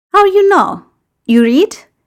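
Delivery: very high, teasing, joking delivery. Gino questions Sid as Sid looks at the newspaper; joking. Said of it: "Gino asks jokingly".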